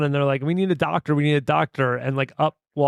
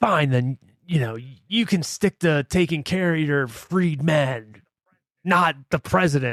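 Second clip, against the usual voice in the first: put-on crotchety, grumpy older man's voice.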